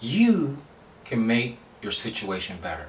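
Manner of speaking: strong stress laid hard on the word you.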